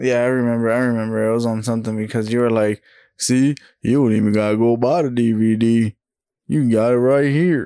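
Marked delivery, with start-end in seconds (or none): 3.2-7.7 put-on good old country-boy voice. Imitating a friend recommending a movie, in a country-boy voice. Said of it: "good old country boy".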